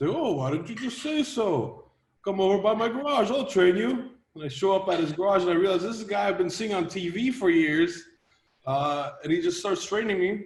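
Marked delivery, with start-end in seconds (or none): 0.2-4.1 put-on Norwegian accent, higher pitch. Retelling a phone call with a strongman organizer: norwegian accent. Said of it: "in his Norwegian accent".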